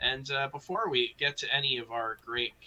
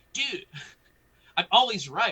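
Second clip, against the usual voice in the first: put-on cocky voice, higher and louder; 6 semitones higher, 5 dB louder than usual. Retelling what Ambi says when right: imitating Ambi. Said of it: "he's just like".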